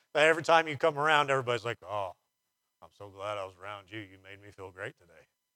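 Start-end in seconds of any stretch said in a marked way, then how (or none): 1.9-5.3 dry sarcasm, low and soft, posing as sincerity. Acting out what people tell a hope sucker outer, acting out sarcastic praise. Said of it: "I'm being sarcastic".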